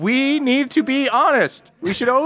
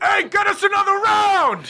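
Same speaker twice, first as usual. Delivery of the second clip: mock yelling, acted out; 7 semitones higher than usual. Telling a story, voicing the bigger dude: retelling a yell. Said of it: "yells out".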